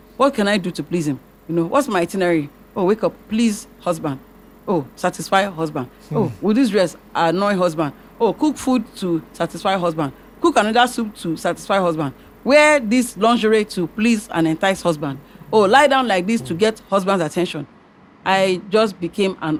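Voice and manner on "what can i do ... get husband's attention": ordinary talk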